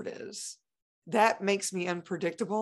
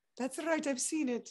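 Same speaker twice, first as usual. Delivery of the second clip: put-on soft Italian accent, pitched higher; 7 semitones higher, 5 dB quieter than usual. Retelling what mom Celeste answered the speaker, imitating Celeste's Italian accent. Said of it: "it's Italian accent".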